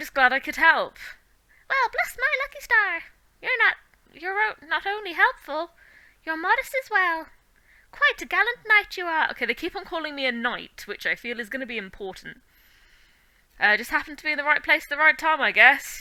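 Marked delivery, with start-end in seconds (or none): 1.7-9.3 high, little fairy-creature pixie voice. Reading aloud, voicing the pixie thanking the knight who helped: pixie voice. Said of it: "I've got to do the voice for the pixie".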